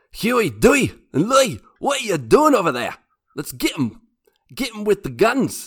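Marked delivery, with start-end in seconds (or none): 0.2-3.0 acted cartoonish Scottish voice. Taking a turn with a DuckTales impression, Scrooge McDuck voice. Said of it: "I'm gonna try to do my best impression impersonation of Scrooge McDuck".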